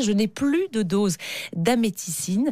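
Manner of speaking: plain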